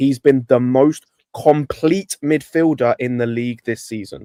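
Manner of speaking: slow, deliberate, weighted delivery, word by word. Arguing a midfielder's case, repeating the point for people in the back: said again slower. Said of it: "I'll say it again slower".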